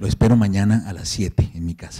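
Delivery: plain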